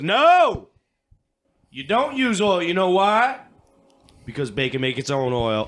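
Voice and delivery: booming preaching delivery at full volume. Retelling a female preacher's sermon to the congregation: imitating a Baptist preacher. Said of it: "She goes".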